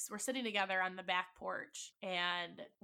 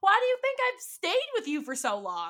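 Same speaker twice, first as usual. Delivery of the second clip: put-on tearful sobbing, much higher, louder; 11 semitones higher, 8 dB louder than usual. Speaker re-enacts what she told him back then: retelling her sobbing. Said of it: "I'm sobbing".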